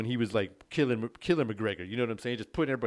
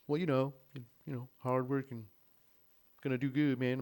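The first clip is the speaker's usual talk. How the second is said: slow, calm, relaxed, laid-back drawn-out drawl; 2 semitones higher, 4 dB quieter than usual. Describing a fighter talking after doing push-ups in a video: imitating him talking all slow. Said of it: "talks all slow".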